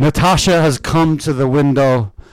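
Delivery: loud, theatrical, declaiming stage actor's put-on voice. Doing a line from the Leon Trotsky movie as a Burton impression. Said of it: "That's my impression of Burton in the Leon Trotsky movie".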